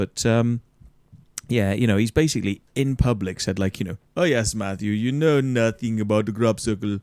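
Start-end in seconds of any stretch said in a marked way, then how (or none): 4.2-7.0 put-on Amsterdam accent, pitched lower. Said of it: "can you do an Amsterdam voice?".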